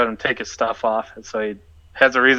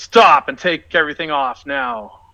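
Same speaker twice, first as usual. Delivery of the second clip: high, threatening, intimidating shout; 6 semitones higher than usual. Playing a bard in a tabletop game, yelling at a bandit: intimidating yell. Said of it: "I'm trying to intimidate him and yell".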